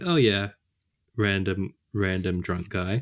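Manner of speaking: normal talking voice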